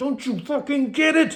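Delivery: frantic, exasperated cry. Retelling trying to shake people over the urgency, the speaker replays frantic exasperation. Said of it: "so frantically just like glaring obvious".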